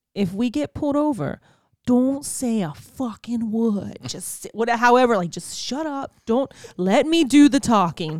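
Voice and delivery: put-on Boston accent all the way through. Retelling what a man told him before they drove, in his boston accent. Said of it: "in his Boston accent".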